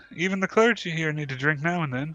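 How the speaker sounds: wry, knowing tone. Game master voices a woman answering a priest who offers to pay, smiling and smirking. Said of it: "smiles and smirks and says".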